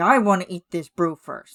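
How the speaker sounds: mock-angry and stern. Describing a green video character, the speaker acts out his line, imitating an angry, stern voice. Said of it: "he's like just very angry, very stern".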